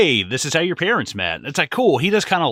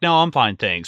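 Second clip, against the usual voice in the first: mocking a snide, passive-aggressive tone. Imitating her turning down more wine: imitating a passive-aggressive reply.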